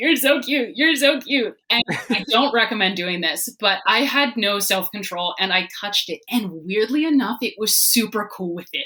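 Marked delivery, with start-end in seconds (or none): 0.0-1.6 acted, high cooing while crying. Retelling finding a tarantula in the wild, imitating her own crying. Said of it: "So I'm standing there crying".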